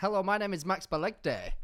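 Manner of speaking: high, loud TV voiceover announcer voice. Quickly introducing your podcast mid-conversation, almost Iain Stirling-esque. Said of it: "almost like Ian Sterling esque".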